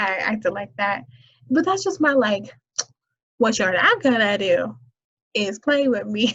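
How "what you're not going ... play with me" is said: put-on firm, stern, no-nonsense voice. Naming a scolding voice: imitating a "don't play with me" voice.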